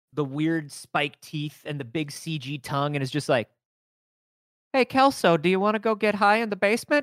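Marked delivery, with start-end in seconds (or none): 4.8-7.1 plain, ordinary everyday regular-guy voice. Mocking how Venom sounds in the film: imitating Topher Grace as Venom. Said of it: "when Venom opens his mouth ... is just like".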